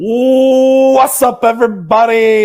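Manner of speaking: very loud, very high hype host voice. Imitating the co-host opening the show, doing a Nick impression. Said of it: "That's my best Nick impression".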